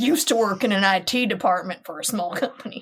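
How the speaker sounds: put-on Southern accent. Reading a Reddit user's story aloud, in a southern accent. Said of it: "I just want to read this in a southern accent".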